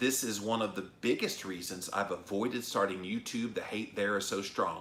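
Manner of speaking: plain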